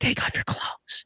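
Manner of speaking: hushed, soft, breathy whisper close to the mic. Retelling a line heard in a movie scene: imitating Aladdin's whisper. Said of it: "the voice actor whispers that into the microphone".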